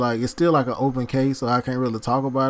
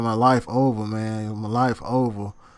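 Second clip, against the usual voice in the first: slow, tearful weeping; 3 semitones lower than usual. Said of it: "he was just crying to me on the phone".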